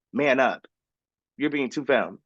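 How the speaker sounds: imitated whispered voice. Retelling words whispered in the ear at an audition: imitating a whisper. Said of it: "she whispers in my ear".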